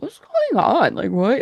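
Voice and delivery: sleepy confused voice. Describing people in night clothes in the hall after a loud crash, imitating sleepy confused people. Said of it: "Like sleepy people in the hall".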